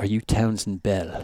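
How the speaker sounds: imitated South African accent. Retelling a man who came over his shoulder in the park, south african accent. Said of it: "he's got this South African accent".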